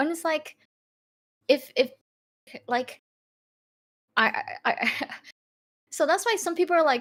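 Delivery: halting, very slow stuttering repetition on I. Discussing a story's characters with another speaker, stuttering. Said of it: "I'm stuttering so hard".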